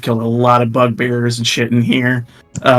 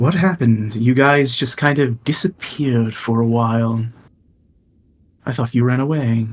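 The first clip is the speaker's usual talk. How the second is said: voice of a spider creature; 3 dB quieter than usual. Narrator speaking as the spider whose voice enters the listeners' minds. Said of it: "the voice of uh, the spider enter your mind and goes".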